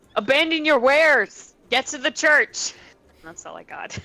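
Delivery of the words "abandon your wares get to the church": high, loud yell in a put-on voice. In character, calling out to the people loading the boat, yelling. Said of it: "I'm gonna yell".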